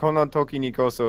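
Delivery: ordinary talk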